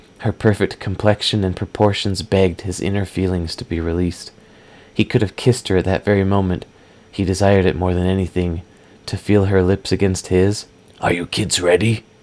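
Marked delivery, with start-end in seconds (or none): 11.0-12.0 deep, low voice. Someone speaks up from behind two kids, quiet, deep voice. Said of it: "Uthrin's quiet, deep voice said behind him".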